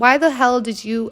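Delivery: ordinary talk, nothing marked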